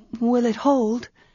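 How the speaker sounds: anxious, uncertain, nervous, uneasy voice. After he fits a silver arm ring on her wrist, she asks: nervous murmur. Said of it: "she murmured, nervously feeling".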